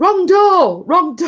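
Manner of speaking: put-on very high, shrill, high-pitched yelling. Retelling a neighbor's grandson opening the wrong door, imitating someone shouting. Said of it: "somebody shouting".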